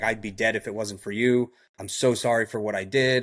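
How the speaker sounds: put-on crying man's voice. Retelling the thanks of a man once thought dead: imitating someone crying. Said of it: "and he's crying".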